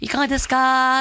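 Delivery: cheery, friendly nurse voice, drawn out. Rubbing a parent's feet while imitating a nurse. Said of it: "看護師さんの真似しながら".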